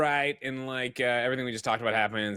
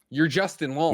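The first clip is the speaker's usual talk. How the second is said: plain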